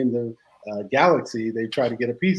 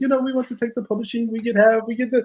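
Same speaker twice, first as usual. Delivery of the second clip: put-on European accent, very high; 12 semitones higher than usual. Retelling what a guy at a london label said in a deal: imitating a european accent. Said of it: "with the European accent".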